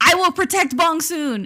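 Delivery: dramatic, high, loud, desperate scream. Retelling a drama scene where a male lead screams desperately: imitating a desperate scream. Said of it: "And he screams".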